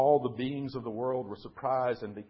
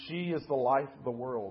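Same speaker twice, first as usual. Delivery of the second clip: ordinary delivery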